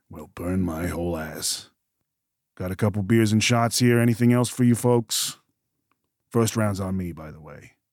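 raspy, hoarse heavy-smoker voice. A game character speaks to the players: raspy two-pack-a-day voice. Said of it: "with his normal raspy two-pack-a-day voice".

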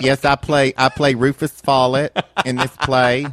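put-on thick Southern accent, high. Speaker recalling how she sounded on morning television: thick Southern accent, real high. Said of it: "I have my thick Southern accent. My voice is real high".

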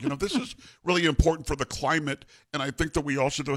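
froggy, puppet-like, nerdy lecturing voice. Mocking advice on the climate in a Bill Gates impression. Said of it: "that's actually a pretty good Bill Gates".

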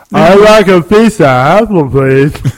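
slow speech with the tongue held. Showing how an actor sounds by holding the tongue while talking: Lou Ferrigno impression. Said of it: "you just hold your tongue and talk, and that's how he sounds".

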